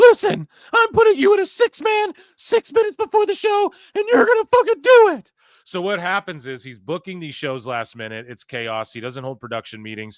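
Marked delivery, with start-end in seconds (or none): 0.0-5.3 mock very high, very loud, shrill, furious barking tantrum. Retelling a last-minute booking, the speaker imitates Tony's angry tantrum. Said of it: "Tony throws a tantrum last minute".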